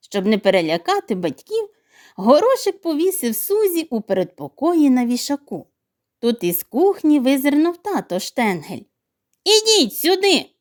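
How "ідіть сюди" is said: high, loud, called-out shout. Papa Shtengel looks out of the kitchen and shouts: shouting. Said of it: "крикнув він".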